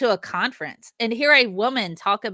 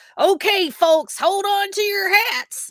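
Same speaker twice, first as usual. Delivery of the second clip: put-on squeaky little old miner voice, very high; 11 semitones higher than usual. Describing the runaway train ride's announcement, in a little old miner voice. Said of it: "the little old miner voice that goes".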